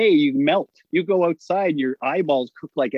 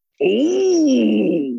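bad, rough, high-pitched oh, stretched out long; 7 semitones higher, 3 dB louder than usual. Retelling a wrestling interview, answering the interviewer: bad Macho Man impression. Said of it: "I can't do a good Macho Man".

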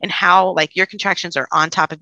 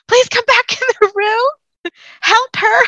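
very high-pitched hollered yell; 4 dB louder than usual. Retelling a birth story, imitating a doctor yelling for help. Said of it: "he's yelling".

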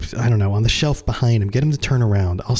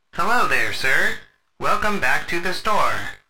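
robot voice, pitched higher; 7 semitones higher than usual. Voicing a robot greeting a grim-looking man entering the store: robot voice. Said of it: "the robot turns and looks up and goes".

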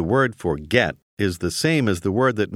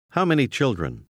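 plain

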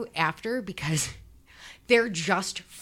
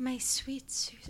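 creepy, unsettling, affected put-on voice; 3 semitones higher, 9 dB quieter than usual. Imitating how he talks in his audio journal: creepy way of talking. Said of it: "he talks like this".

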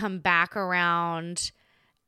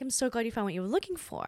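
put-on, very nicely said, sugary, sing-song sweetness; 3 semitones higher, 5 dB quieter than usual. Retelling a remark made to the person dated: imitating own nice tone. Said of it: "I said it very nicely".

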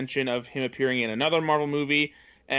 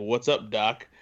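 lower, gruff, mildly menacing put-on voice; 4 semitones lower than usual. Retelling a trailer line, imitating gruff, mildly menacing Michael Keaton. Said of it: "more gruff and mildly menacing".

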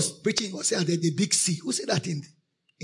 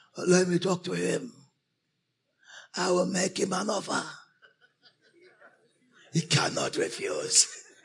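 put-on old village elder voice. Retelling how a man who declared himself an elder spoke, put-on elder voice. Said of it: "So he talked with an elder voice".

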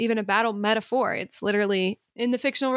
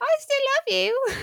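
put-on very high voice like a little old lady. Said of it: "Now he's a little old lady".

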